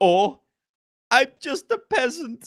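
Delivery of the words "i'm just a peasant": bad Middle Eastern accent, higher. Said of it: "I've got the accent down".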